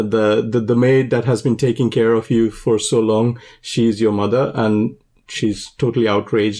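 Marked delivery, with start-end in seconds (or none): none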